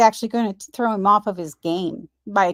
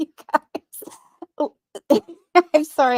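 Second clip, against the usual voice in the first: speech broken up by hard laughter; 8 semitones higher than usual. Reacting to another speaker finishing a story, laughing while talking. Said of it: "I'm laughing so hard".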